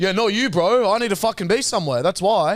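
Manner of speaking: high, aggressive, confrontational man's cadence. Retelling what a man in an Uber said to the speaker, imitating an aggressive man. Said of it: "he had the cadence of a fucking like aggressive man".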